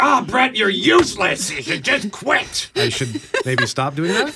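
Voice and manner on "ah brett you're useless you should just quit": high yelling. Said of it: "and I yell at myself".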